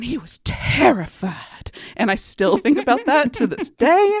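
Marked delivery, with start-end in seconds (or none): 0.0-1.4 gushing, breathy, excited southern belle drawl. Imitating a woman who once read the line: imitating a breathy southern belle. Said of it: "like a southern belle, all breathy and like excited".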